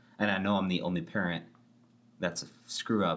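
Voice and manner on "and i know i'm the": plain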